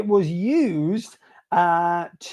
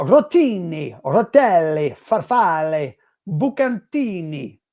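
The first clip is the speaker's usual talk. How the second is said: very slow, drawn-out put-on Italian accent; 4 dB louder than usual. A quiz host reads the pasta answer options in an italian accent. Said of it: "that was my best Italian accent".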